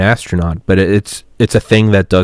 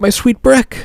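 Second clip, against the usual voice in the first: soft-mannered, very high-pitched voice.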